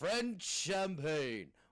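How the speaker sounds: acted very drunk delivery. Recalling the champagne advert for a friend, imitating a hammered Orson Welles. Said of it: "He's absolutely hammered".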